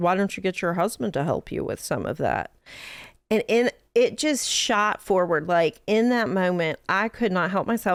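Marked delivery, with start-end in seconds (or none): 0.0-2.5 acted, very dry delivery. Retelling what a customer in a mechanic's office said: imitating a dry remark. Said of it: "very dryly looks at me and says".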